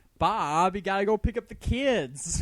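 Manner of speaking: put-on Southern country drawl. Taking a turn in an impression contest: Southern country accent. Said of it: "That was some Southern country shit".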